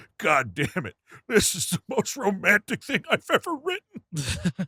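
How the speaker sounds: mock weepy, overcome, swooping, tearful sobbing. Picturing Frank Miller at the typewriter, imitating Frank Miller crying.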